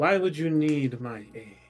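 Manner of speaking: huge, booming, loud voice echoing like a cavern. Narrating a tabletop scene in a cavern, voicing her in a much louder echoing voice. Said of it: "much louder than what y'all are used to".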